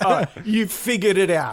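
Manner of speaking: high, condescending, patronizing talking-down tone. Showing how to answer someone patronizingly: patronizing. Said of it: "They're really patronizing, like".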